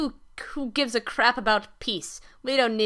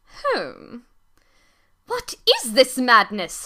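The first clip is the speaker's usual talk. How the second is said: fussy, loud, swooping fancy-bird voice; 5 dB louder than usual. The speaker voices the fancy bird character reacting to what he finds: [name]'s fancy bird voice. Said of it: "As, as a beautiful and fancy bird, / Why isn't he afraid of chipping a nail or something?".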